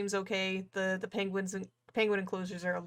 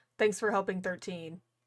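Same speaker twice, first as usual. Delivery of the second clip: ordinary delivery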